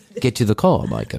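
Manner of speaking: put-on spoken in a British accent. Quoting the talking car from the show: Kit voice with British accent. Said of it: "why did Kit have a British accent?".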